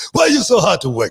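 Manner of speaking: put-on shrill, loud, high-pitched hollering in a Canadian accent. Remembering a wrestling producer who complained about him: imitating Pat Patterson's Canadian accent. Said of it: "him and that Canadian accent".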